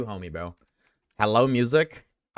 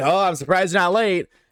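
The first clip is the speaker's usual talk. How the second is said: high-pitched, taunting, jeering heckling yell; 7 semitones higher, 6 dB louder than usual. Imitating chat yelling about being early: imitating chat yelling. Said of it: "you guys are gonna yell at me".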